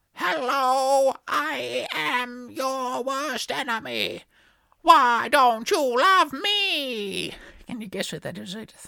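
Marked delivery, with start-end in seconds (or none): 0.2-7.4 very slow, high, loud robot voice, "me" stretched. Doing an impersonation for the listener to guess, in a robot voice. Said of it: "It's the robots".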